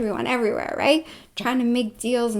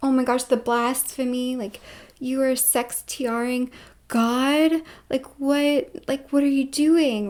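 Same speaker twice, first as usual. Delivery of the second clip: slow, tearful, weeping voice, acted out. Retelling how Mark reacted on hearing what was done: imitating Mark crying. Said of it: "And Mark's just crying".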